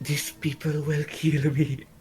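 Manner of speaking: hushed whispering. A disguised player character asks another character for help; whispering. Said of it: "I'm whispering".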